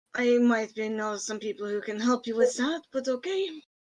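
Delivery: grim, dark mutter under the breath. Voicing a character who mutters an offer of help: darkly muttering under breath. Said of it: "might darkly mutter under his breath".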